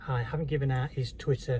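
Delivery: ordinary talk, nothing marked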